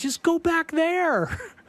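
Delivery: acted cheerful tone. Retelling a man telling people to go back into the basement, imitating a happy tone. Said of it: "He's very happy when he's saying it".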